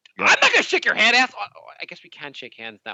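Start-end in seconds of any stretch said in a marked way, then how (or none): 0.2-1.3 put-on, sudden, raised, pitched-up outburst. Acting out how hesitant people will react to an offered handshake, mock outburst. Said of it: "I didn't mean to flash out".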